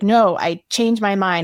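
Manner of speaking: put-on fierce, forceful tone. Retelling how she refused the procedure: imitating a fierce protective refusal. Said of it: "mama bear fighting mode".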